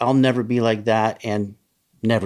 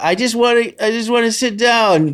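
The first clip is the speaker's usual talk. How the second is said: put-on very high slurred drunk voice; 11 semitones higher, 3 dB louder than usual. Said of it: "just flopping around and slurring".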